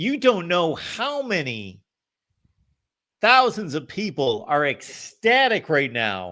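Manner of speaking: heavy sarcasm, sing-song and high-pitched. Greeting a caller who finally got through: sarcastic tone. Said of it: "I'm reading the sarcasm detector in your voice".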